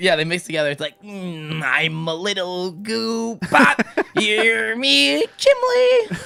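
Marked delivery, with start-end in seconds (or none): 1.0-6.2 swooping, very slow mixed cartoon voice. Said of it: "you're like the Joker slash the Sonic".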